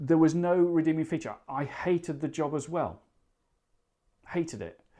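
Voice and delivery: choked up with feeling. Recalling a hated job from years ago, getting emotional. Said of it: "I'm getting quite emotional about this now".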